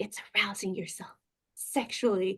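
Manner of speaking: voice dropped to a breathy, near whisper. Retelling the therapist's explanation: imitating a lowered voice. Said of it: "she lowers her voice again".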